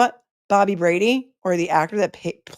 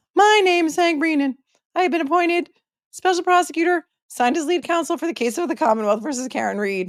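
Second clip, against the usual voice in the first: put-on high, cracking boyish voice, like a voice breaking; 9 semitones higher than usual. Reading out the special prosecutor's affidavit, imitating him: Bobby Brady voice. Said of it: "It's like the Bobby Brady voice".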